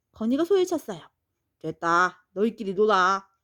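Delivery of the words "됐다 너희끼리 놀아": short, blunt, dismissive brush-off tone. The dog answers children who invited him to play, curt. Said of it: "퉁명스레 대답했어요".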